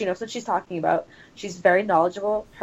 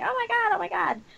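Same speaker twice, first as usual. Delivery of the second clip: exclaiming, much higher, slower; 12 semitones higher, 4 dB quieter than usual. Recalling hearing her over the TV during the Home Run Derby, imitating her exclaiming. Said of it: "all I could hear was her going".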